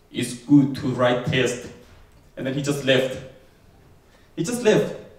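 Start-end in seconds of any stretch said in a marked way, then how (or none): 0.1-1.5 put-on low, level Finnish accent. Retelling what a mentor said at the desk: imitating a very low Finnish voice. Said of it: "speak to me in a very low Finnish voice".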